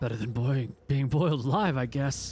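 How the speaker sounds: muttered, mumbled under breath. A man threatened with death if he yells replies, muttering. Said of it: "He swallows hard and then mutters".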